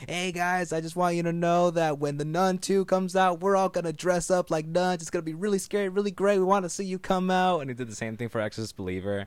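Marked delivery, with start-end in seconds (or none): 0.1-7.6 put-on cute, very high-pitched, thick Spanish accent.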